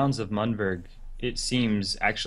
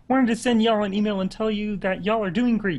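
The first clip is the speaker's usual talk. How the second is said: put-on puppet frog voice; 12 semitones higher, 5 dB louder than usual. Reading out an email to LOTRO Players News, in a Kermit the Frog voice. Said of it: "I don't feel like Kermit and y'all".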